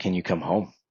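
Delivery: put-on tearful crying voice. Retelling mom calling on the phone: imitating mom crying. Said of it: "she's crying and she's like".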